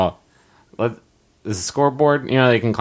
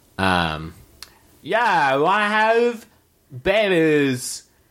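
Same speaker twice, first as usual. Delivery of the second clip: full, higher-pitched surfer-bro voice; 7 semitones higher than usual. Asked by another speaker to do it, trying a surfer voice. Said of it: "do your surfer voice now".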